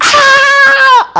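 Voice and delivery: loud, high scream while straining.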